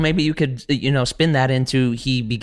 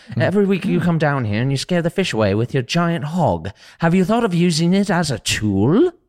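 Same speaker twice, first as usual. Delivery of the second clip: higher-pitched talking owl character voice; 5 semitones higher than usual. Auditioning for the owl part, addressing a character at the river, in a talking owl voice. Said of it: "this is my audition for the owl".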